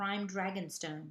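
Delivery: ordinary delivery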